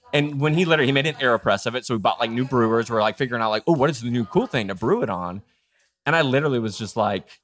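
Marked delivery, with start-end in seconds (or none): none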